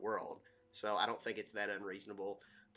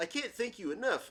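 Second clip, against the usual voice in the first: high goofy voice. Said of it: "it was the Bullwinkle".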